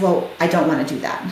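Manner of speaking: ordinary delivery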